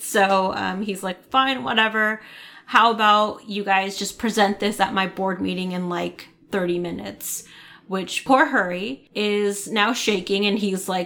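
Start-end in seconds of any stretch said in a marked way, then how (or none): none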